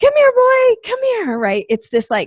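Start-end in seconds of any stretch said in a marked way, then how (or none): 0.0-1.4 very high, loud, high-energy excited calling voice. Explaining how people get a dog's attention: high-pitched, high-energy dog call. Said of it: "high pitched, high energy".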